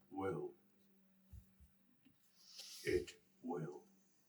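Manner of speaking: deep hushed whisper. Reading a story aloud, voicing what speaks from the boy's throat: much deeper voice. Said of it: "and the voice goes much deeper".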